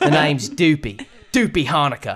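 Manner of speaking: put-on Southern accent. Voicing a character who greets Annie and Steven: Southern accent.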